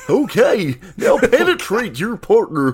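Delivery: put-on slow, drawn-out, swooping sing-song kids-show dinosaur voice. Joking about a performer they watched for years, doing a Barney voice. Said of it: "if he still had the Barney voice".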